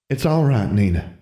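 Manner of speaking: worn-out, weary, tired-sounding voice. Miss King calls out to Nina, in a weary voice. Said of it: "Miss King called in a weary voice".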